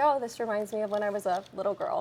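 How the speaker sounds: ordinary talk, nothing marked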